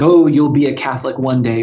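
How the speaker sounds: normal talking voice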